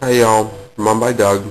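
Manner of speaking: mouth full of food, speaking while eating. Speaker greets viewers in a video while talking with mouth full. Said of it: "Sorry, I have my mouth full".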